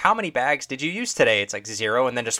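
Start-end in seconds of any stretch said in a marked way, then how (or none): 0.0-1.4 little automated self-checkout machine computer voice. Speaker imitating the grocery store self-checkout machine, little computer voice. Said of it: "the little computer voice is like".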